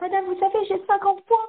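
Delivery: small deferential voice. Acting out a student telling her teacher about her points, mock-humble. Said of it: "Elle va arriver toute humble".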